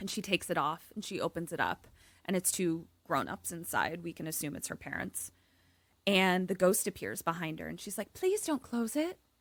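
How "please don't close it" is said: put-on British accent slipping in, pitched up. Voicing a ghost who asks a player not to close a locket: British accent. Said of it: "I don't think she has a British accent, but it started to come out like that".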